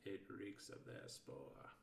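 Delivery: soft, slow hissing alien voice. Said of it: "it hissed".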